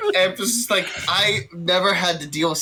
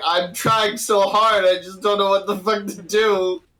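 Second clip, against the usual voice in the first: words breaking up with laughs. Playing a character who is visibly laughing: laughing while talking. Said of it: "I am visibly laughing".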